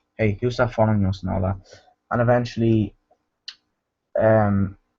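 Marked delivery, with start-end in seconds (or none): none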